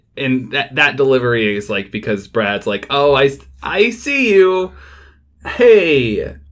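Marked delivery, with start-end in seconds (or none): 2.9-6.3 mock gritted-teeth voice, much slower and higher. Describing a movie scene, imitating Brad's delivery through gritted teeth. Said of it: "through gritted teeth".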